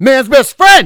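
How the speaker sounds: very loud, very high, shrill booming scream. Retelling how a stranger on the street yelled at a dog: imitating a man yelling. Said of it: "yelling like that".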